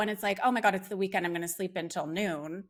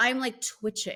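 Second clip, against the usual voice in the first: ordinary talk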